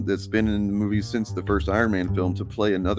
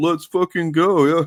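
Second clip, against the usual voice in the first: loud, high, scornful mocking tone; 9 semitones higher, 6 dB louder than usual. Showing how people sneer at a movie trailer line, said in a mocking tone. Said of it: "in a mocking tone".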